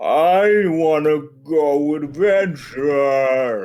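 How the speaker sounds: very slow, loud, stretched-out zombie voice. Voicing a zombie in line behind the players: zombie talking very slowly. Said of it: "you see a zombie talking very slowly".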